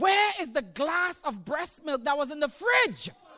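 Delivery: play-acted high, alarmed, panicky voice. Retelling the morning his wife came to him, imitating wife's panic. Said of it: "my wife came up to me like in a panic".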